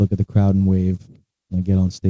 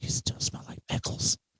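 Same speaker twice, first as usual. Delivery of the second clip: very quiet, hushed, soft, breathy whisper. A player's character walks up to another character in a tabletop game, whispering. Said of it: "and just whispers".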